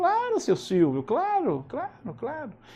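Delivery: soft, endlessly patient voice, high and sing-song. Retelling a TV interview, answering the host: patient Chico Xavier voice. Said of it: "E aquela voz bem paciente, aquele jeito de Chico Xavier".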